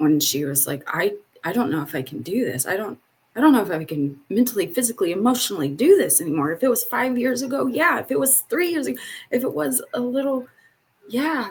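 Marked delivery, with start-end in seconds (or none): 0.9-6.5 mock voice full of fear, frightened. Retelling what a nervous older woman told her, imitating a fearful voice. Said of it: "I could hear the fear in her voice".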